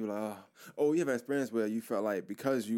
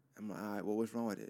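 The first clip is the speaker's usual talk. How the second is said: ordinary talk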